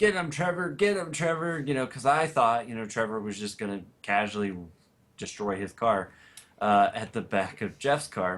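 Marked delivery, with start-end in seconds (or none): 0.0-1.6 acted-out scream, much higher pitch. Recalling yelling at a fellow driver to hit another car, retelling a scream. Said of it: "I start screaming".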